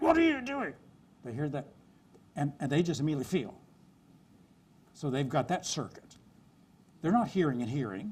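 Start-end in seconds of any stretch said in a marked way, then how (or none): 0.0-0.7 sharp, harsh tone, very high pitched. Showing what people hear when someone snaps at them: harsh tone of voice. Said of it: "They hear a harsh tone of voice".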